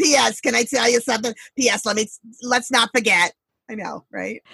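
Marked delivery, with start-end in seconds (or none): 0.0-3.3 put-on elderly grandmother voice.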